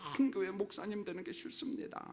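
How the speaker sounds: soft, mournful, lamenting whisper in Gyeongsang Korean dialect. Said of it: "막 경상도 사투리로 막 하나님 앞에 애통해하면서".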